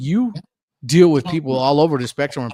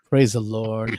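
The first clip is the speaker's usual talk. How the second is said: put-on, calm, peaceful preacher voice, lower pitch; 3 semitones lower than usual. Imitating a pastor greeting guests with a calm manner: imitating Pastor Bob's calm manner. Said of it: "Pastor Bob's like".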